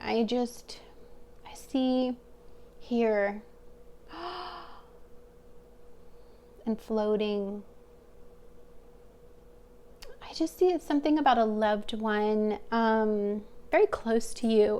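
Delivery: emotional, moved, getting choked up. Giving a reading for the listeners: emotional, getting choked up. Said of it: "I'm getting super emotional about your guys' reading".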